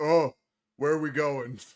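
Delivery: loud troll voice calling up. A game narrator voicing a troll calling up from the lower decks: troll voice. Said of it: "you see like a troll head uh, pop up".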